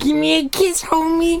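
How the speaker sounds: very high, put-on cartoon mom voice. Joking about getting her cap and gown, the speaker slips into a Marge Simpson voice. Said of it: "You sound like Marge Simpson".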